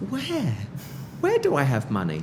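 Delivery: high-pitched, fast, incredulous tone.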